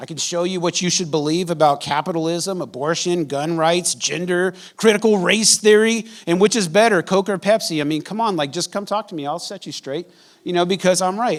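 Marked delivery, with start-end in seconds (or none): none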